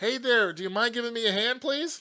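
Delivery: high-pitched, loud calling out. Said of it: "She sees me and yell-, yells over".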